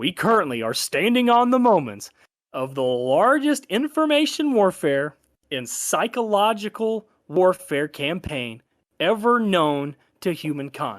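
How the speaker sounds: forceful emphasis.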